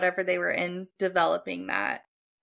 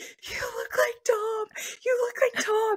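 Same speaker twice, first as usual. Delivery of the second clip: put-on play-acted high whisper through helpless wheezy laughter. Retelling a woman laughing hard at a man, imitating a wheezing laugh-whisper. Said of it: "like you're laughing so hard, you like you're whispering".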